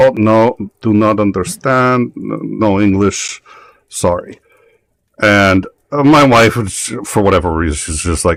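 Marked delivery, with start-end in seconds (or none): 0.0-4.4 put-on heavy Russian accent laid on thick, slow. Retelling what a stranger said in line, thick Russian accent. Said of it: "in a pretty thick Russian accent".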